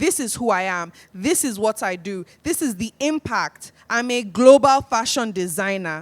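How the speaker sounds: firm, assured, confident delivery, full of conviction. Showing how to introduce yourself when you speak with conviction: speaking with conviction. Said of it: "When you speak with conviction".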